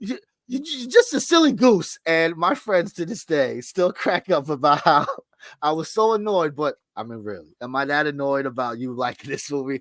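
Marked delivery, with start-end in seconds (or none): 0.0-2.0 very high, put-on cross, angry scolding yell. Telling the listener about yelling at them over Hellraiser, retelling a mock-angry yell. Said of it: "I'm yelling, but I'm not really angry".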